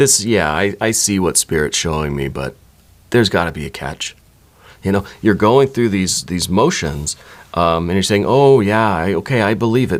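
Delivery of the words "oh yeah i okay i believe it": heavy, insincere, mock-agreeing sarcastic tone. Imitating the listener's doubtful replies during a tarot reading: imitating a sarcastic tone. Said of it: "a sarcasm".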